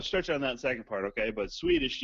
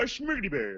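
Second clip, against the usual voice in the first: high, mock Swedish-accented gibberish. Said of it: "Why is that the first impression I've ever heard you do?".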